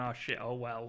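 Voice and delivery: ordinary talk, nothing marked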